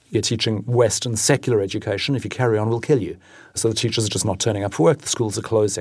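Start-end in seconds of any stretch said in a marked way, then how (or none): none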